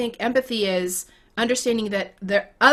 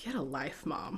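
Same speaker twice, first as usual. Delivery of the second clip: very quiet, low, hushed deadpan; 5 semitones lower, 15 dB quieter than usual. Mother retells her daughter's reaction to a book dedication, retelling a deadpan reply.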